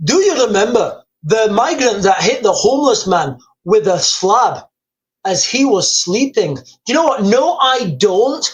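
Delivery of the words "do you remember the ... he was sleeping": put-on upper-crust Edinburgh Scottish accent. Reading out someone's question aloud in a posh Edinburgh Scottish accent. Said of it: "in my best Scottish accent".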